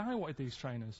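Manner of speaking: normal talking voice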